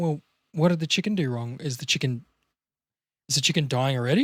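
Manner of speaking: gentle, soft, kind, sympathetic, caring tone. Speaker acts out a more compassionate answer about a chicken, gentle and compassionate. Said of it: "If I'm a bit more compassionate".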